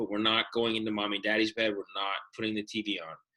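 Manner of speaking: usual speaking voice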